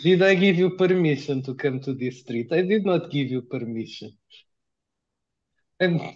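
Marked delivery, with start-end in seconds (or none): 0.0-4.2 put-on strong Russian accent with broken English. A role-playing game player speaks in character to another man, in a strong russian accent. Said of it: "with Russian accent. ... it is strong accent, ... You're a Russian, right? Almost".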